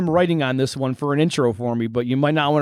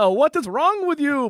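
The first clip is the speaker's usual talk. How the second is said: very high, angry voice; 12 semitones higher than usual. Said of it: "can you do an angry Count Von Count".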